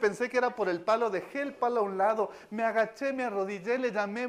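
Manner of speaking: usual speaking voice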